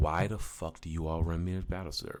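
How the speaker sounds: normal talking voice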